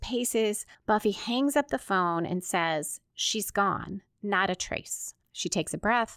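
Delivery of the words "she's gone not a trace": ordinary talk, nothing marked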